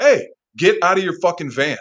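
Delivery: very loud, high-pitched yelling. Standing in the pouring rain, retelling yelling at a guy in his van: retelling a yell. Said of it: "I'm yelling at the guy".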